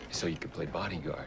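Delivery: plain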